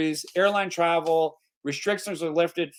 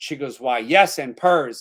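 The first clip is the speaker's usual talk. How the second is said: normal talking voice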